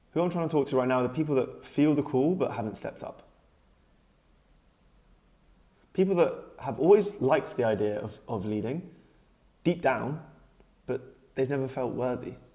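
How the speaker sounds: moved, heartfelt, welling-up emotional delivery. Speaking directly to viewers, getting emotional. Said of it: "for some reason I'm getting emotional".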